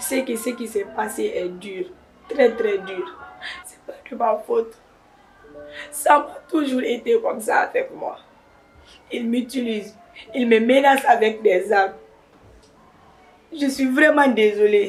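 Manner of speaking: speaking through tears, crying. Apologizing to someone who later tells her to stop crying, crying while talking. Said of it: "arrête de pleurer".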